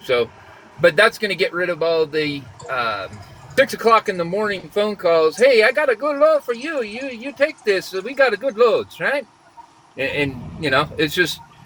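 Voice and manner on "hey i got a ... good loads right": put-on Chinese accent, pitched up. Imitating early morning phone calls offering a good load: imitating a Chinese accent. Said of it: "are you doing a Chinese accent over there?".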